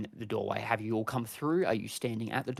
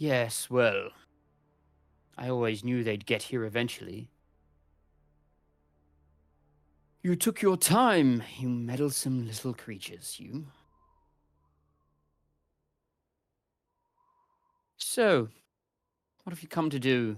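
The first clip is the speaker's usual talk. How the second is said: commanding, domineering, imposing lordly voice; 4 dB louder than usual. A game master voices a lord greeting the arrivals his servant announced: imposing voice. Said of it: "This imposing voice that you've heard".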